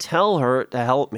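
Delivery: ordinary delivery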